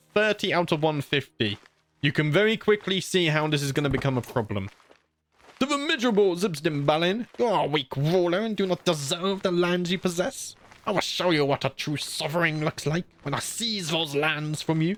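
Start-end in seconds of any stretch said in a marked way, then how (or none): 5.6-14.9 put-on goblin character voice. Playing a strategy game, sending a message to a rival ruler; goblin voice. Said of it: "I need to work my goblin voice".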